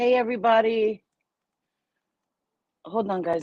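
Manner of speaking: talking through choking, words choked mid-speech. Speaker greets everybody on mic while choking. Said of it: "I'm choking".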